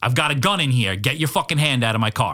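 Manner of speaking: loud, mock menacing, threatening shouted voice. Retelling a driver warning the cyclist from the car: imitating a loud warning. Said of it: "And I hear loud".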